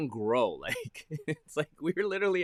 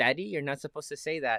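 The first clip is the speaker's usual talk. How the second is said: put-on young boy's voice. Imitating a child scolding a parent for swearing: imitating my son. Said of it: "I can hear my son right now".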